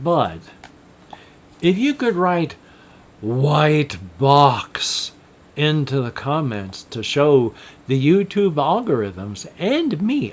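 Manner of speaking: very slow, drawn-out, deliberate delivery. Asking viewers to write a phrase in the comments, talking very slowly. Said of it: "I'm talking very slowly".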